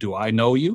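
big, loud, booming voice. Retelling a huge lineman asking this from behind the speaker, booming voice. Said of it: "I hear this booming voice behind me".

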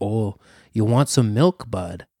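put-on Upper Midwest Wisconsin accent. Describing a menacing man heard on a show, Wisconsin accent impression. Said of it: "he's got that Wisconsin accent".

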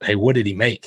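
nervous, anxious put-on voice. Retelling a golfer asking others about a score: Ben Crenshaw voice. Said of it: "and only Ben Crenshaw's voice".

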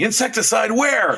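shrill, very high, panicked, freaked-out shriek. Retelling a story scene as the husband, imitating Bill screaming. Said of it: "And Bill starts screaming".

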